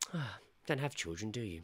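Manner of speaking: acted condescending, patronising, talking-down tone. Retelling what a customer's mother said to them: imitating a patronising remark. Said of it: "the most patronising thing she could have fucking said".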